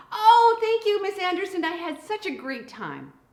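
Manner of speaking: put-on high, loud, gushing preteen girl voice.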